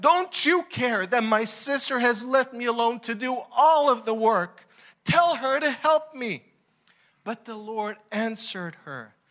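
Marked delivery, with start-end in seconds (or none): 0.0-6.4 high, furious, upset and annoyed voice. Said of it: "She was so upset".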